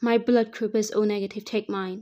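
ordinary delivery, nothing marked

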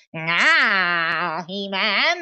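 villain voice with long drawn-out "ah". Joking about opening legs and hearing a villain: Skeletor voice. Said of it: "gonna look like Skeletor from He-Man".

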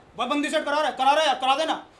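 put-on irritation, loud, angry, pushy insistence. Acting out people who angrily ask for a favor: mock-angry demand. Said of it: "दूसरे वो हमसे गुस्से में बोलते हैं".

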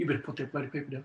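scolding, soft, hushed stage half-whisper. Retelling his mum's warning at reception: imitating a half-whisper. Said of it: "my mum whispers in my ear".

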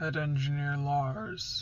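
heavy, deep, rumbling voice. A lord rises to his full height and addresses his head engineer, rumbling. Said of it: "his lord rumbled out".

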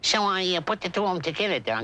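cartoon character voice with Brooklyn-Bronx accent. Explaining how the voice was created, slipping into Bugs Bunny voice. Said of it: "That's how I got the voice for Bugs Bunny".

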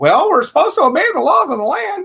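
very high, swooping, sing-song put-on voice. Quoting people who come up against them: imitating critics' voice. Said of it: "I'm sorry I did the voice just now".

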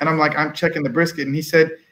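plain

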